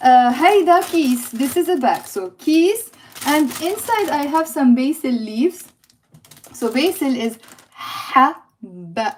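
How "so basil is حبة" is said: haba spelled out very slowly, drawn out. Teacher says a difficult Arabic word for students, very slow. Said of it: "I said it really slow".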